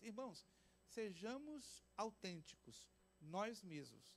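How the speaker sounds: normal talking voice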